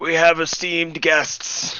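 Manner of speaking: put-on old man whisper. Speaker slips into character to talk to him, whispering in an old man's voice. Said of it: "I'm going to like whisper in the old man's voice".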